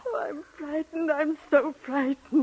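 whining through tears, tearful crying voice. A woman, with a scarred guest present, is told not to cry: crying. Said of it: "You'll only work yourself up by crying".

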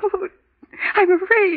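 high, sobbing, tear-soaked crying. Answering someone who scolds them for crying, crying. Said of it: "what is there to cry about?".

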